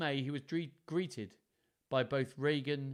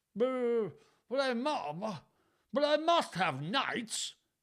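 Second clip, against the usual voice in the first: shrill, high, drawn-out, stammering splutter; 9 semitones higher than usual. Reading a story aloud, a king protesting to his daughters: spluttering. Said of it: "spluttered Lear".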